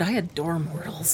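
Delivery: softly murmured. Quoting a character's line from a story, murmured. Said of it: "she murmured".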